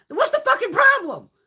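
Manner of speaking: high, loud, exasperated tone. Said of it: "I'm like".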